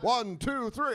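theatrical cartoon vampire voice, pitched high. Answering a request to speak as a wrestler: Count from Sesame Street voice. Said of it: "That sounds like Count Chocula".

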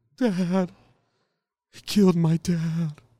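slow, drawn-out, angry cartoonish lion voice. Voicing the fly's son angry about his dad: Cowardly Lion voice. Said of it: "That fly sounded like the Cowardly Lion".

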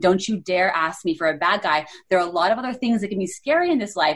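ordinary talk

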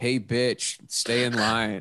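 heavy, mock-serious sarcasm.

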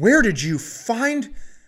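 mock angry outburst. Retelling a story, the speaker acts out how she reacted: mock-angry. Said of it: "And she is so mad".

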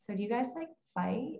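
hushed, curious.

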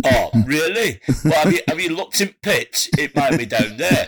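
put-on northern English accent. Answering in a spoof radio play, mock generic northern accent. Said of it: "they just do a generic northern accent".

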